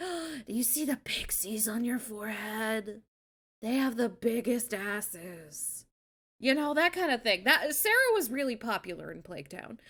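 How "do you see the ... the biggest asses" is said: put-on drugged-out, zooted voice. Retelling how a stoned game character talked: imitating a drugged-out character. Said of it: "she's just kinda talking like this".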